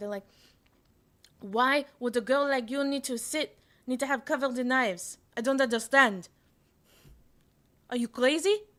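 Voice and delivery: poor put-on Israeli accent. Retelling being yelled at by army officials, in a shitty Israeli accent. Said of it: "That's my is, is shitty Israeli accent".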